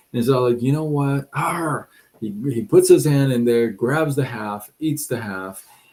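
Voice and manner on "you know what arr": absolutely furious, enraged outburst of temper. Retelling a story about a man on a plane: imitating a furious man. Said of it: "This guy is absolutely furious at this time".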